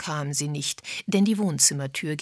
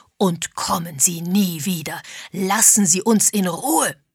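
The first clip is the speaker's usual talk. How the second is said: enraged, furious, raised voice through bared teeth; 7 dB louder than usual. A man orders unwelcome questioners to leave and never come back, furious. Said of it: "vor Wut verzerrt".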